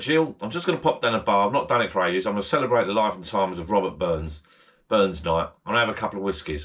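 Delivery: normal talking voice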